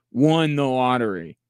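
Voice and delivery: ironic, sarcastic delivery with scare-quotes inflection. Repeating that the Mavericks won the lottery, sarcastic air quotes on "won the lottery". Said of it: "I hope you can tell by my inflection in my voice that I am making air quotes when I say that".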